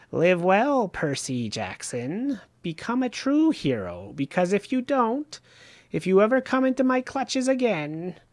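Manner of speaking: high, swooping, cackling, gloating voice. A winged creature warns the hero before flying off, cackling. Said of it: "she cackled, savoring the idea".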